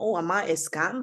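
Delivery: ordinary talk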